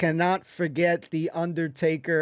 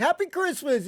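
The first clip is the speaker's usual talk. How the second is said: all-excited, very high cheer; 9 semitones higher than usual. Retelling how a scene began, imitating Pikey sounding excited. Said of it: "he's all excited and shit".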